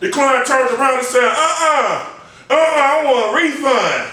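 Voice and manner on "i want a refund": mock very slow, fed-up, pissed-off tone. Speaker retelling how the client in the chair turned around: imitating a pissed-off client. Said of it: "The client was pissed off".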